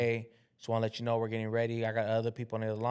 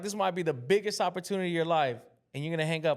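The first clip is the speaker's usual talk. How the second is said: pressing, insistent, fast, urgent, with raised pitch; 7 semitones higher than usual. Retelling a lady's phone call: imitating an urgent voice. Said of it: "I could hear the urgency".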